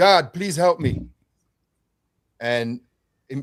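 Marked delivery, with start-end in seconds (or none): 0.0-1.0 loud, screamed-out cry. Retelling a fight on the ground: retelling a scream. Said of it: "I screamed out".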